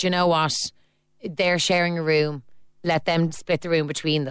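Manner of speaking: plain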